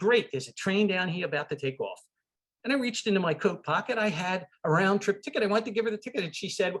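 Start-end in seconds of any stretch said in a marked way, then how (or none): 0.0-2.0 put-on New York accent, much higher. Retelling what a woman from Amtrak told the speaker, in a New York accent. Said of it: "in her greatest New York accent".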